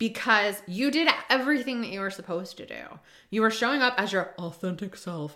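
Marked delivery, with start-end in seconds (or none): 3.3-5.4 lower, mock-earnest, fake straight-faced voice. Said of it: "I can't even say that with a straight face".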